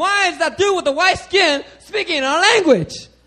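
alarmed, high, loud, startled outcry.

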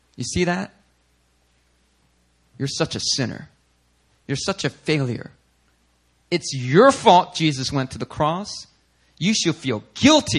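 put-on accusing whisper. Voicing what Satan whispers to Christians after they sin: imitating Satan whispering. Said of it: "Satan comes and he whispers, he says".

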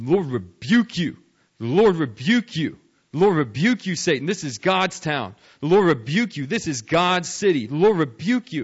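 loud, repeated, scolding yelling. Telling a story, the speaker acts out a missionary yelling at a man, retelling his yelling. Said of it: "he started yelling at him".

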